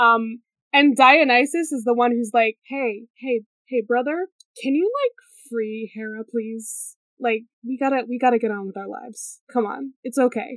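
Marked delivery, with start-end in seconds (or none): 2.7-10.6 put-on casual brotherly coaxing voice. Retelling the myth as imagined brother talk, Dionysus coaxing: casual brother talk. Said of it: "imagined brother talk".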